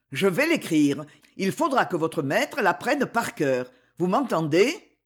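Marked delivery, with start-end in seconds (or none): none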